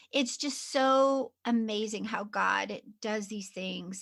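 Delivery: moved, emotional, marvelling voice full of feeling. Responding to a guest's story about finding her calling: getting emotional. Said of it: "I am getting emotional here".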